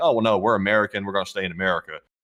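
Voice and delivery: normal talking voice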